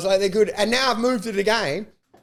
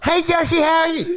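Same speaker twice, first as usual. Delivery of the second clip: mock yelling, much higher; 8 semitones higher, 3 dB louder than usual. Complaining while holding the camera, retelling someone calling out to Josh, imitating someone yelling. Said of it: "yelling like this".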